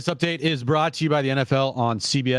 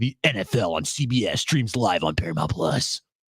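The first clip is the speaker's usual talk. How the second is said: lower, big-voiced radio announcer voice; 4 semitones lower than usual. Reading a football streaming promo: Tommy Tide announcer voice. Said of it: "You sound like the Big Voice Westwood One guy".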